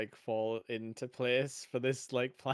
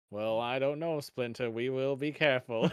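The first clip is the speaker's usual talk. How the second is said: flat, monotone cartoon-character voice. Speaker comparing the cartoon turtles' voices: monotone Leonardo impression. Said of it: "Leonardo is like really like monotone".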